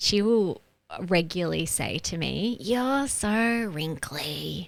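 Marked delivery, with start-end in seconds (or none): 2.6-4.7 mock grossed-out, disapproving, negative tone. Retelling what the youngest child regularly says: imitating a negative tone. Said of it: "she'll say it in a negative tone".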